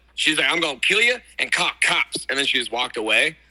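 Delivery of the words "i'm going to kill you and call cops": blunt, threatening strange woman's voice. Retelling how a stranger outside the van spoke to him: imitating a woman he met. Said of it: "I was imitating her".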